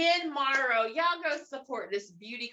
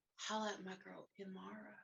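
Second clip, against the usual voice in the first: seductive voice, lower and quieter; 4 semitones lower, 16 dB quieter than usual. Acting out a commercial for Sleep Good apparel: sexy voice. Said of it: "Sexy voice".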